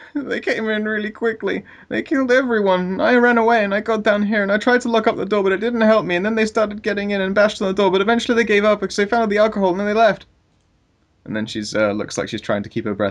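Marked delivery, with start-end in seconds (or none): 0.1-10.2 put-on very high, sniffling little-girl voice. Voicing the child explaining how she escaped: little girl voice, sniffling. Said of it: "she sniffs and goes".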